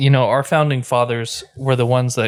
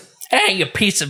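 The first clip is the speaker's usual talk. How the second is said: Boston accent, higher pitch; 7 semitones higher than usual. Imagining a historical figure differently, the speaker voices Benjamin Franklin in a Boston accent. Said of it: "that's a good Boston accent".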